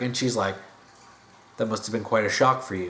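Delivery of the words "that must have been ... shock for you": put-on deadpan sarcastic voice, lower. Retelling a movie scene, imitating Tigress: Tigress deadpan sarcasm. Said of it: "her complete deadpan sarcasm".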